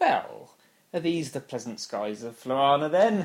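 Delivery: put-on needling, loud, swooping sarcastic tone. Recounting Sarah Jane being sarcastic to him, mock-sarcastic as Sarah Jane. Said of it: "She's just a bit sarcastic to him".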